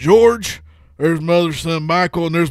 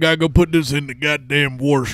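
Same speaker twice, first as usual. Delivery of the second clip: put-on Southern accent. Mocking how Southern people say wash: put-on Southern accent. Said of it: "I love sounding like that".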